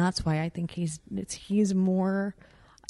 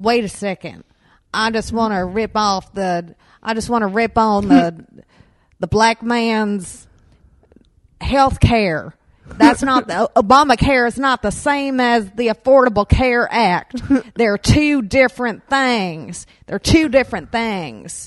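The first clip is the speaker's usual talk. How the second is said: very loud, drawn-out put-on Southern accent, man's voice; 4 semitones higher, 11 dB louder than usual. Putting on a character to prove a point, in a southern accent. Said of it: "I know I'm using a Southern accent".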